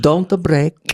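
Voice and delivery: put-on whispering, hushed, in an Italian accent. In a sketch, telling a scene partner not to break, whispered italian accent. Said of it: "I whisper, I keep the Italian accent".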